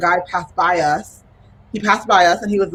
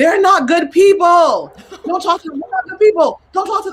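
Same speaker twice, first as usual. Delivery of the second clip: put-on yell, higher and louder; 11 semitones higher, 4 dB louder than usual. Retelling how a market seller yelled at them: imitating a man yelling.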